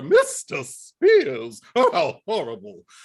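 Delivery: very slow, swooping, drawn-out, almost English register drawl. Retelling a scene as a teacher in the movie: Eve Arden impression. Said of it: "I love doing impressions of Eve Arden".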